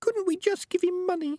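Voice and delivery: tiny, very high, small little voice. Peaches asks Morris whether they could just give money; small little voice. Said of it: "It was a little voice".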